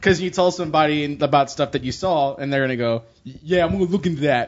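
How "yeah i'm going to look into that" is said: put-on 13-year-old teenage kid voice. Speaker imitating someone's reply when told about something, 13-year-old inner-city kid voice. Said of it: "that's an impression of a 13-year-old inner-city youth".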